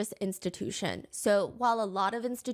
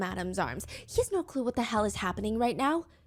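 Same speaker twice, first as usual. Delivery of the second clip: ordinary talk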